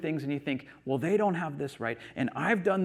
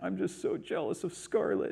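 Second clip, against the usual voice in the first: sad, downcast, sorry-for-himself voice; 2 semitones higher, 4 dB quieter than usual. A parent retelling what a son said on walking up: imitating a sad son. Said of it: "He's like all sad".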